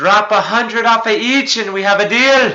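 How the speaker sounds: very loud, shrill, high-pitched bellow. Playing a character yelling back through a stone to strike a deal, yelling. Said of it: "I'm just gonna yell to him".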